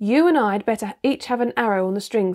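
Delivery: ordinary delivery, nothing marked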